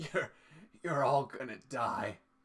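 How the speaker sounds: gasped words in a dying voice. Voicing a character stabbed through the heart, speaking with a dying gasp. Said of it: "with his dying gasp".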